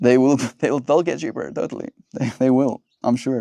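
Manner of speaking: playful, light joking tone, reassuring. Talking about waiting to buy a car, in a joking voice. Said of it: "saying it in a joking voice".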